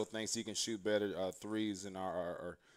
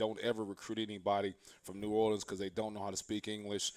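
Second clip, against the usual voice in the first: plain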